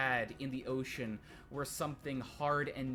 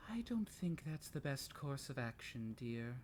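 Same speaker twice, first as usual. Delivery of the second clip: very gentle, soft inner voice; 6 dB quieter than usual. Voicing a voice in the back of a player's head: very gentle voice. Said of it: "a voice in the back of your head that very gently says".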